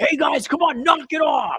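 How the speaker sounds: very high, hollering eighties football coach voice. Describing a scolding, the speaker mimics an eighties football coach. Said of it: "football coaches".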